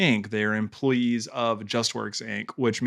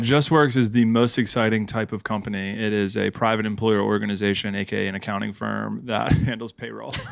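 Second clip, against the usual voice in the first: ordinary delivery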